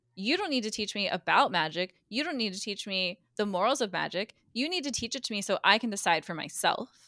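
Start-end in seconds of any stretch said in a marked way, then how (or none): none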